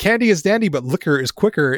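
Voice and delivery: plain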